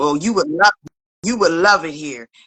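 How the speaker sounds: put-on angry voice. Retelling how a guy met in a store reacted: imitating him getting mad. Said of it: "And he got all mad".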